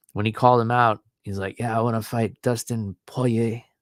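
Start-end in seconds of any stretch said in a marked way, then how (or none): 1.6-3.6 put-on French accent. Retelling a fighter's call-out in his French accent: Benoit Saint Denis French accent. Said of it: "that French accent".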